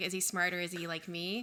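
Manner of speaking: normal talking voice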